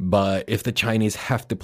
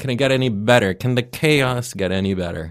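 dry, ironic, sarcastic tone; 3 semitones higher, 4 dB louder than usual. Catching up with listeners on what's been happening, sarcastic. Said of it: "I'm being sarcastic here".

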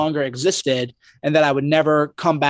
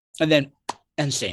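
ordinary delivery

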